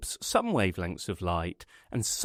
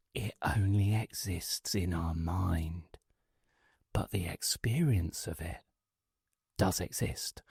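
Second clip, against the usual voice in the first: hushed secretive whisper with "mind" drawn out; 3 semitones lower, 6 dB quieter than usual. Sharing a secret with an uninvited guest across the room: whispering. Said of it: "I lower my voice to a whisper".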